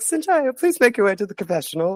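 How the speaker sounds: very high, calm, soothing, disembodied announcer-like voice. Retelling a voice from nowhere calling someone to the confessional: imitating a soothing voice. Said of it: "this really soothing, nice voice coming out of nowhere".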